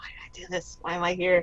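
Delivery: muttering under breath. Voicing a character who regrets his mistakes: muttering under his breath. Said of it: "muttering under his breath".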